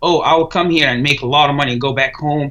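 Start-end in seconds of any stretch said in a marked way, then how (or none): none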